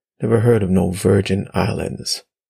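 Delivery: ordinary delivery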